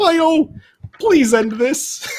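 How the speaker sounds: bad, squeaky, very high-pitched frog voice. A narrator voices Kermit propping open a backstage staff door: bad Kermit impression. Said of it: "that's a terrible impression".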